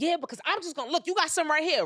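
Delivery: acted very high, crazed, frantic shouting. Retelling a video of a neighbor going crazy: imitating a neighbor yelling. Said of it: "he's yelling, going crazy".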